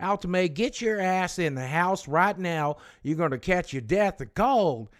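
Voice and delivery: acted high shout. Retelling grandfather shouting from the porch at grandmother in the rain: imitating Carl shouting. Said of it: "My grandfather standing on the porch shouting at her".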